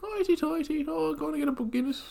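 put-on Irish woman voice, very high, badly done. Asked if trying to do an irish woman, attempting a bad irish woman accent.

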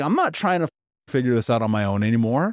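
ordinary talk

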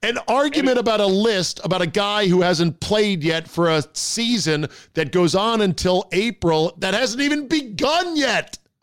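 shouting. Ranting about an argument over a ranking list, yelling. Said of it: "I'm yelling, aren't I?".

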